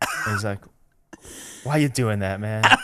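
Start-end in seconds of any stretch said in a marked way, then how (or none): 1.6-2.6 mock dismayed, disappointed, deflated tone. Retelling a TV guest's reaction to a naked ad: imitating someone sounding disappointed. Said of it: "really disappointed".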